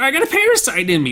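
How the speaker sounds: high-pitched, swooping, weaselly way of talking. Describing how a man talks, imitating his high weaselly voice. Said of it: "Like that's how he talks".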